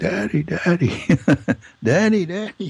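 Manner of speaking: very high, drawn-out, top-of-lungs scream. Retelling running to their father and calling him, retelling screaming at top of lungs. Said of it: "screamed at the top of my lungs".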